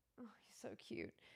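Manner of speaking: soft whisper.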